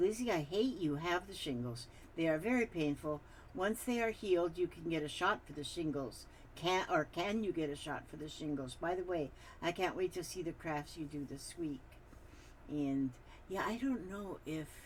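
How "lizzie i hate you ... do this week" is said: ordinary talk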